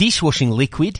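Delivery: put-on Australian vowels on dishwashing liquid. Comparing Australian and New Zealand vowels, saying a word in an Australian accent. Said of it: "So the Australians would be like".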